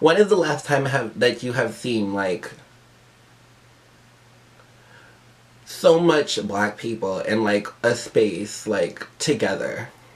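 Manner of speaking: teary voice, close to crying. Speaking to viewers while getting emotional: close to tears. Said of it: "I'm gonna start crying".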